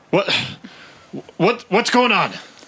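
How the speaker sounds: bewildered, heavy breathing. Game narrator voicing a man who skids to a stop: confused, breathing heavily. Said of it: "And he's breathing heavy".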